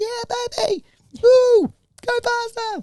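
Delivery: tiny, very high, slow squeaky little voice. Retelling a tandem motorbike ride, the child behind calling out: imitating Jasper's little squeaky voice. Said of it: "this little squeaky voice constantly going".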